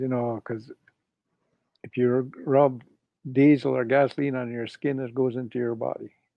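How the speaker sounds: ordinary delivery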